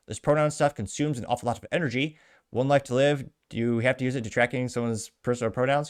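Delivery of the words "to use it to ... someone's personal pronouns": normal talking voice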